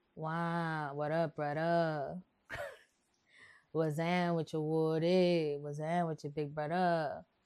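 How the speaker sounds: fake New Orleans accent, wow stretched long. You show how Trey from the West Bank talks, in a fake New Orleans accent. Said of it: "That's my fake New Orleans accent".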